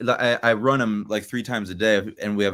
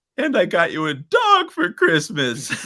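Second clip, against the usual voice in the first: high, loud, tearful crying through the words; 9 semitones higher, 5 dB louder than usual. Retelling a huge fight before Christmas, quoting what she said: imitating her crying. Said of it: "and she's crying".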